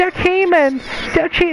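high, squeaky duck-like voice. Telling a friend how another guy talks, mocking his duck-like voice. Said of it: "That's how he talks".

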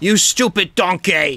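loud, shrill, high, hard bellowing yell. Joking that a chef will show up and yell: Gordon Ramsay yelling. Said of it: "expect Gordon Ramsay to show up and be all like".

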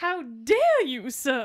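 put-on scandalized, shocked voice with Southern belle accent. Mocking Ron in a film scene with Hermione, as a mock-scandalized Southern belle. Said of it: "like he's a fucking scandalized Southern belle".

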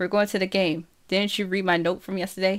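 plain

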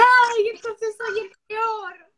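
high, loud, slow crying. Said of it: "te largaste a llorar".

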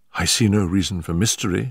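plain reading voice

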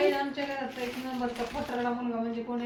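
usual speaking voice

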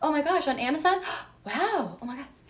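thrilled, excited. Acting out a Valentine's date scene after announcing it: acting out a date scene. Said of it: "so, scene".

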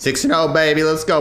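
cracking voice. Player celebrating going six and oh in a game, voice cracking. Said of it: "voice crack".

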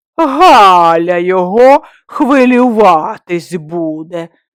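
sneering mocking mimicry, one word drawn out. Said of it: "перекривив насмішкувато".

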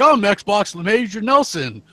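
slow, drawn-out, teasing parody voice full of mockery. Retelling how one guy in a video mocked Larry Hryb: mocking Larry Hryb impression. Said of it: "The one guy was mocking Larry Herb".

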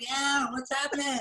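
very high-pitched put-on voice. Retelling how Evan greeted the players: Evan impression. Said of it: "that was a great impression".

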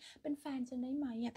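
ordinary talk

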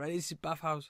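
put-on Chinese accent on every word. Retelling what a bathhouse worker said on arrival: imitating a Chinese accent. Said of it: "Chinese accent".

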